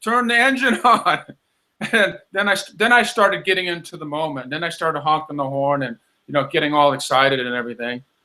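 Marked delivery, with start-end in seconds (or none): 0.0-1.2 raised, pitched-up shouting across a distance. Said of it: "I hear her staff yelling".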